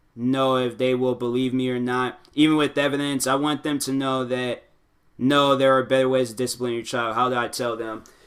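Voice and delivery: ordinary talk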